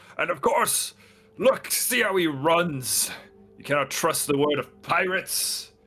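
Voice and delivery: very loud calling out, words stretched long. As the players start to run away, a minotaur calls out loudly above everybody. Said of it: "loudly above everybody and says".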